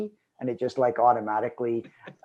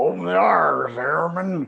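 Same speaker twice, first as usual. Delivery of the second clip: mangled, put-on, imitated Missouri accent; 6 semitones higher, 7 dB louder than usual. Recalling how Don called out to the airman, in Don's mangled Missouri accent. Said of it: "Don's mangled Missouri accent".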